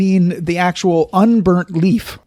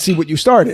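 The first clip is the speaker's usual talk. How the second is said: normal talking voice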